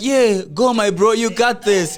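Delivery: casual, encouraging cheering-on. Mocking a defender who watches instead of tackling: imitating Chalobah cheering on. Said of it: "He just said, like".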